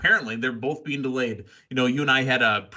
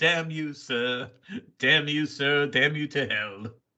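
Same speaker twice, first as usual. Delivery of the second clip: fake, put-on bad English accent. Joking about going to Dallas, the speaker does a bad English accent. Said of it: "I got to work on my English accent".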